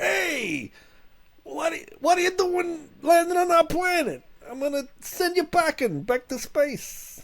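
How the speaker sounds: squeaky, very high silly voice, long drawn-out hey. Asked to do another funny voice, the speaker confronts aliens landing on their planet. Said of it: "Do another funny voice".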